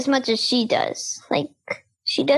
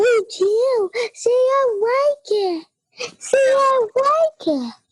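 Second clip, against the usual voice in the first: bright, cheerful, high, happy pet-talk voice; 9 semitones higher than usual. Demonstrating how people talk to a dog: high, happy voice. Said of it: "we still talk to like this".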